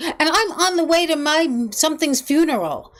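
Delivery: mock angry screaming outburst, high-pitched and drawn out. Retelling how an angry woman on the street screamed at a friend: imitating a woman screaming. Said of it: "started screaming at him and screaming at him".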